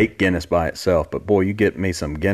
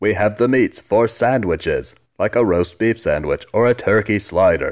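put-on cartoon spy character voice. Describing a sandwich commercial spokesman, the speaker does the Archer voice. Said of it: "There's the Archer voice".

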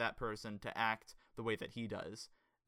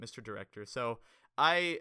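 plain

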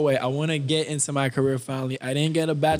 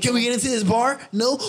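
teasing, mocking take-off with pitch raised; 8 semitones higher than usual. Mocking another person in the conversation with a mocking impression of them. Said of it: "why is that your impression of me?".

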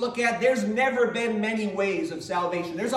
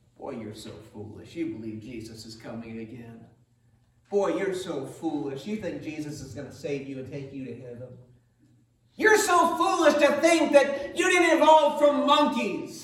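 acted-out taunting sneer, mocking scoff with pitch swoops; 6 semitones lower than usual. Speaker acting out how the world mocks Christians, in a mocking voice. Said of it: "the world mockingly looks at us and says those things".

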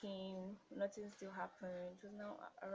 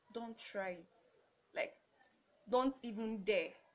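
stern, commanding, no-nonsense authoritative tone; 9 dB louder than usual. Retelling what he said when she tried to end the call: imitating an authoritative voice. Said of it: "How you being so authoritative?".

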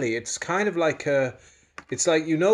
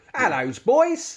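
pitched-up, put-on British accent; 7 semitones higher than usual. Asked to do the accent from the Mary Poppins role, British accent. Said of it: "Can you do your British accent?".

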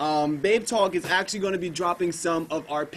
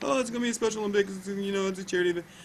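mocking, clueless fourth-grader voice; 3 semitones higher, 3 dB quieter than usual. Retelling what the stupid fourth graders said: imitating stupid fourth graders. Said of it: "your voice dropped and you started talking like that".

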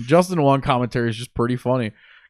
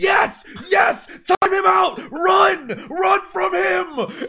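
mock excited scream, very high and stretched out. Retelling how he screamed during the tournament: retelling excited screaming. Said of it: "he's literally screaming like".

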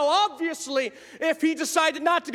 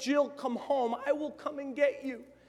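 tearful, crying, begging and pleading voice; 3 semitones lower, 8 dB quieter than usual. Retelling a mother's phone call begging her daughter home: imitating a crying mother. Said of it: "her mother would call her crying".

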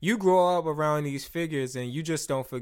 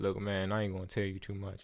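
very low, deep bass voice; 7 semitones lower, 9 dB quieter than usual. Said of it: "where is this bass coming from?".

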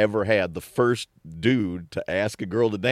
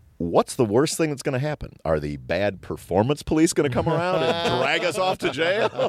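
mock unruffled, very calm, slightly raised pitch; 5 semitones higher than usual. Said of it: "very, very calmly said".

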